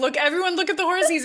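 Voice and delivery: loud, high shouting. Telling how they drive past horses with the kids, the speaker retells their own shout. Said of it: "And I'm I'm shouting to like".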